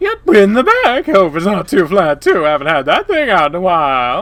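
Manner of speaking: loud, obnoxious voice. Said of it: "Such a dumb voice".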